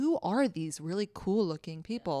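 ordinary talk

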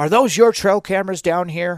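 only a faint, lightly sketched hint of loudness. Retelling a stranger on a bike who asked about cameras, imitating a loud voice. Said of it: "in a loud voice".

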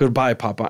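acted, flat, let-down, disappointed delivery with no feeling. Retelling a hallucination where a daughter says goodbye at a casket: imitating a disappointed goodbye.

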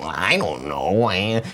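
put-on voice, dropped low and taken slow. Retelling how a suspect answered people: imitating Robert's Tom Hardy-like talk. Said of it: "He would talk like that. And he talks like Tom Hardy".

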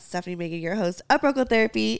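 ordinary talk, nothing marked

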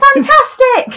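put-on shouting. Acting out initiates walking around the village: imitating a cult member shouting. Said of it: "shouting things like".

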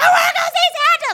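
shrill, high, loud wailing tantrum cry. Retelling a childhood tantrum at the mall, imitating crying and screaming. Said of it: "Like crying and screaming".

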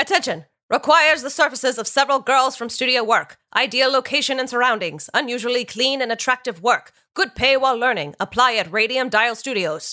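mid-Atlantic accent, carefully read, pitched high. The speaker reads out a 1922 factory job ad in a transatlantic accent. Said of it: "read in a transatlantic accent by [name]".

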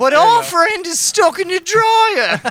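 tiny, squeaky, very high elf voice. Asked to say a line in an accent, the speaker finishes it: house elf voice. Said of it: "you sound like a house elf".

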